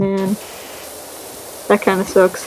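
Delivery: soft, sad, spoken as an aside.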